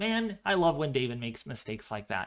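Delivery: ordinary talk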